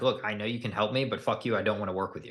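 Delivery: put-on resentful tone. Playing a client who is fed up with a condescending salesperson: acting out a resentful client. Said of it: "I'm out of resentment for you".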